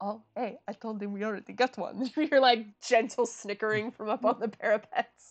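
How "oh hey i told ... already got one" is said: low, hushed, kept-down stage half-whisper. Someone pokes their head down from the parapets to a companion, half-whispering. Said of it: "sort of be whispering like".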